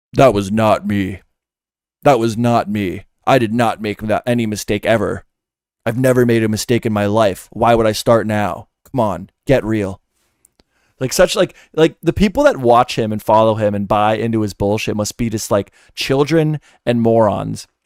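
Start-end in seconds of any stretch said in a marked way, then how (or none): 0.1-10.0 mock, faked deeper voice. Mocking a man's denial caught on video, repeating it in a put-on deeper voice. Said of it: "If I say it with a deeper voice".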